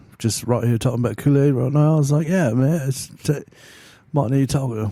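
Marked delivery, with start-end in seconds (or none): 2.3-4.9 really bad, butchered British rock-star accent. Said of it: "That's my really bad British Def Leppard accent".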